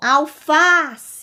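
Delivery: alface with middle syllable fá strongest. Showing a word's tonic syllable aloud, stress on fá. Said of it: "eu tenho uma sílaba mais forte, que é a sílaba fá".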